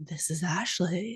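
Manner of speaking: soft, hushed, sultry, seductive sensual voice. Recreating how you said your own name when recommending a story, imitating your own sensual voice. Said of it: "said my name in such like a like sensual voice".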